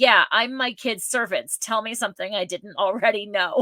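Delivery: mock snide sarcastic tone. Imitating a parent's reply, heard in the background: imitating a sarcastic parent. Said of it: "with sarcasm in the background".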